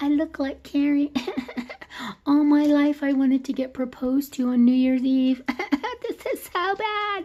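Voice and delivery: very high, fake sobbing, phony crying whine. Mocking a phony couple, the speaker quotes a crying girl with a wine-stained dress: imitating a girl crying. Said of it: "that girl's in there crying".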